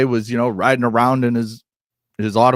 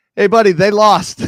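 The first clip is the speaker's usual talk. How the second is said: very high, loud, acted yell; 10 semitones higher, 6 dB louder than usual. Act out the Pope answering someone who yelled Go Cubs at him, imitating someone yelling back. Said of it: "he just turns and yells back".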